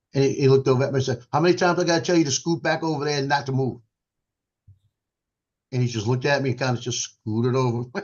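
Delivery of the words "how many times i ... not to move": stern, scolding Marine drill-sergeant voice, pitched up. Speaker retells a man's changed-voice reply to him, imitating a Marine voice. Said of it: "went marine on him. I got the voice changed, the inflection changed".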